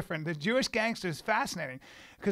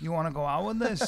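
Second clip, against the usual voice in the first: played-up, put-on Chicago Italian accent; 2 semitones lower than usual. Echoing another speaker's line back at them in a chicago italian accent. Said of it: "in your Chicago Italian accent".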